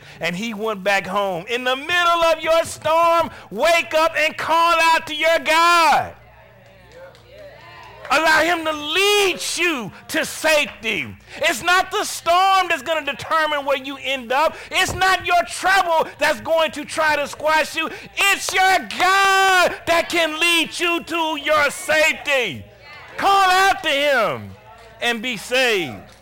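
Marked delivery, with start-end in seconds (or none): 1.5-25.9 getting excited, high, loud shouting. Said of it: "I'm getting a little excited".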